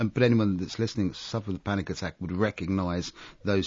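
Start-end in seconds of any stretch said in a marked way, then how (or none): none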